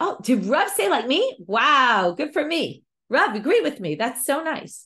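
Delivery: put-on tickled, flattered, delighted, pleased exclamation. Explaining a Gemara passage, acting out the reply in a delighted tone. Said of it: "it's all about the tone in which he said it".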